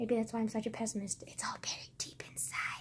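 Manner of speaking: soft whisper under the breath. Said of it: "God, why did I whisper?".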